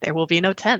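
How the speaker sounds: put-on deep, booming voice. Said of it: "I gotta do a James Earl Jones voice".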